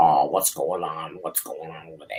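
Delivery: put-on very low, hushed old lady chain-smoker voice. Speaker jokes about someone's lady voice, imitating a chain-smoking old lady. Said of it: "what kind of old ladies are you hanging out with".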